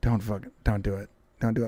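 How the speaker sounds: very deep voice dropped right down, very low, hushed. Speaker recalling hearing Shane's voice: imitating Shane. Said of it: "I remember hearing his voice being like".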